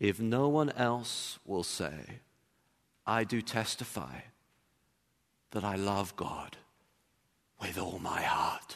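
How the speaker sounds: acted shaky, wavering, quavering, trembling voice. Retelling a teenage girl standing up to answer a pastor: retelling a trembling voice. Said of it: "in a trembling voice".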